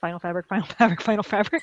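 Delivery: rattled off very fast, three times.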